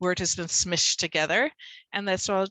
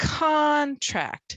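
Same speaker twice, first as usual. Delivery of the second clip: first syllable con of contract stressed hard; 8 semitones higher, 3 dB louder than usual. Demonstrating homograph stress to learners, stress on CON in contract. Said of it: "We're going to punch it".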